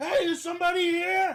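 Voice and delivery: shrill, very high yell at the top of the lungs. Retelling how he went in, imitating someone yelling at the top of his lungs. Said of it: "yelling out of the top of his lungs".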